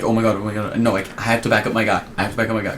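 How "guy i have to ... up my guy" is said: normal talking voice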